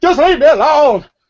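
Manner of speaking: shrill, very loud and very high half-scream. Narrating a man running off down the street, arms waving, sort of screaming. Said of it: "sort of screaming".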